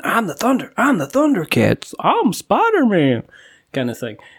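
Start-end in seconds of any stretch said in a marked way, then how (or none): 0.0-3.2 fake childlike American accent, much higher. Speaker describing children playing superheroes outside, kids' put-on american accent. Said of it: "fighting outside with their stuff and now going".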